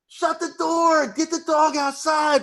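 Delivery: real loud, very high, drawn-out shouted yell. Retelling telling people off-mic to shut the door: retelling own loud yell. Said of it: "real loud".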